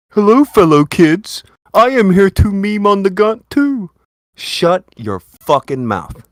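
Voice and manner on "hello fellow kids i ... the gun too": mocking, ridiculing voice, pitched up high. Imitating someone joining the joke: mock imitation of someone. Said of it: "He's like".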